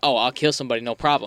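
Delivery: ordinary delivery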